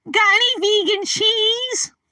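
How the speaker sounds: high nerd voice. Running through a short repertoire of impressions, doing an Urkel impression. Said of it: "another Urkel impression".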